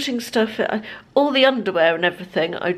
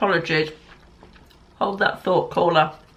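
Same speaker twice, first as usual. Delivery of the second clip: speaking with mouth full of food. Speaker apologizing to a caller mid-bite: talking with mouth full. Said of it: "Shouldn't have taken a mouthful of that while I'm talking to you".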